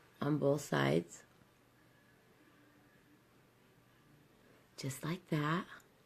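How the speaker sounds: speaking quietly. Showing how to apply a color while the baby sleeps: speaking quietly. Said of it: "so quiet, but my baby's sleeping".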